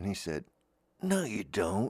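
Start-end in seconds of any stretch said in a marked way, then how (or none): 1.0-1.9 listless, deflated, low-energy voice. Retelling a man's reply in a conversation, imitating the man's voice. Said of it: "he was talking like this".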